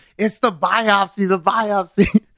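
very high, drawn-out yelling. Retelling how the ladies up front reacted: imitating staff yelling. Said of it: "they just start yelling".

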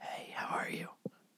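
soft, airless, voiceless whisper.

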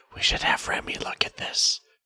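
whisper close to one ear. Leaning over to a fellow character during a contract meeting: whispering. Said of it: "whisper into Chadwick's ear".

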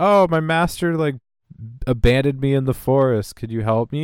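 mock weepy, tearful crying voice. Retelling a scene where a woman in the forest pleads: imitating someone crying. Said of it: "she starts, like, crying, and she's like".

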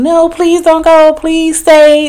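very high-pitched, whiny, whining voice. Retelling a woman begging her boyfriend in a parking garage: imitating a woman whining. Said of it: "a lady that was whining, like, at her boyfriend".

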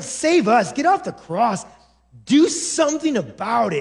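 put-on disdainful, mocking voice. Acting out the mockers at the cross: imitating voice full of disdain. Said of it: "they are just full of disdain and anger".

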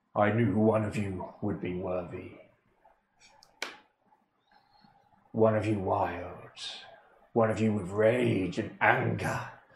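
deep, mighty, powerful, strong voice. A game master voices a figure speaking in the players' heads, in a deep, powerful, strong voice. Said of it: "You hear a deep, powerful, strong voice in your head".

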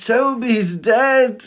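very high, mock tearful crying voice. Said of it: "And I'm crying on the phone".

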